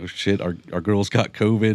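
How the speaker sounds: plain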